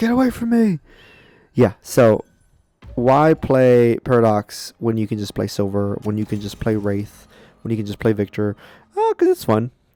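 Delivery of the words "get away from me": mock, very high-pitched scream. Retelling a player's reaction during a replayed fight: imitating someone screaming. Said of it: "he's literally screaming, like".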